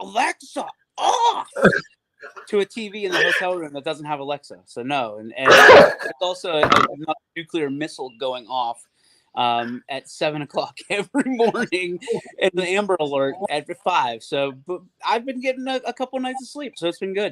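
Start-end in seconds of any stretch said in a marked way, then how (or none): 0.0-1.5 high, climbing yell. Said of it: "dead sleep and yell".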